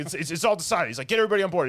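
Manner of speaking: high, loud, eager, bossy character voice.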